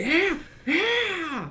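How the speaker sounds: very high shouted yeahs. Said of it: "you just hear".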